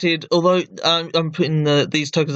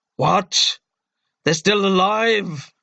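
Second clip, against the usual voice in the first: enraged, angry monster beast voice; 4 semitones higher than usual. Game master voicing a character in combat, angry voice. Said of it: "That's his angry voice".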